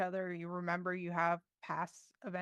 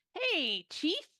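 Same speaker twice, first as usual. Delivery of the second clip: very high, squeaky, nasal creature voice; 10 semitones higher, 5 dB louder than usual. The narrator voices a floating skull greeting the player who just woke: nasal floating-skull voice. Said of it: "greets you with the nasal voice".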